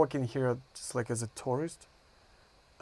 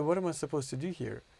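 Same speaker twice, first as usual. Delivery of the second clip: normal talking voice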